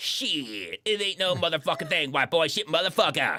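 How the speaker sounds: put-on tough-talk voice, first "shit" stretched out.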